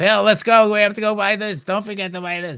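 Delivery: obnoxious, shrill, loud and grating hurried voice. Retelling a woman ordering her companion around while shopping, imitating a grating voice. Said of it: "her voice was just grating".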